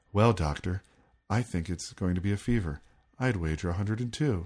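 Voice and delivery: creepy, flat ventriloquist voice. Retelling how a man throws his voice into an anatomical doll, creepy flat Pin voice. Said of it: "that sort of like creepy flat tone".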